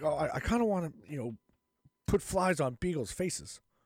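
halting, hesitant put-on voice, stumbling through the words. Joking about a public figure, doing a Fauci impression. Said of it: "That's my Fauci impression".

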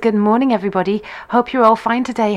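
ordinary talk

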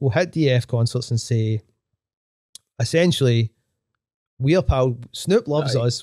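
ordinary delivery

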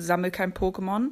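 ordinary talk

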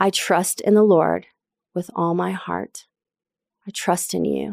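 prayerful delivery. Speaker repeating a scripture verse as a personal prayer; said as a prayer. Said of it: "I'm going to say it as a prayer".

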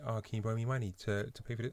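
mock whisper. Retelling what a guy whispered to the speaker, imitating him whispering. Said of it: "And he's like whispering".

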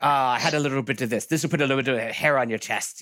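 very bad put-on Irish accent, drunk-sounding. Retelling a film scene, voicing the old town drunk offering hooch, in a bad irish accent. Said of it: "That's the worst Irish accent ever".

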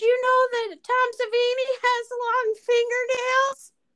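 very high put-on character voice, clumsily done. Doing a bad Sue Chin impersonation about fingernails. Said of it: "That was my, uh, best impersonation of".

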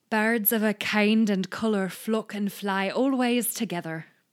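put-on Scottish accent. Reading an old quotation aloud as asked, in a put-on accent. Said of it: "Accent and just have fun reading it".

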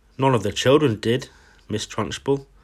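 plain

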